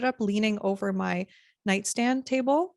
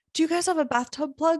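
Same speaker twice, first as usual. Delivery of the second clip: put-on slightly higher voice, light Polish accent; 7 semitones higher than usual. Retelling what a man said at a gas station at six thirty a.m., in a slight Polish accent. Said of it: "a little bit of a Polish accent".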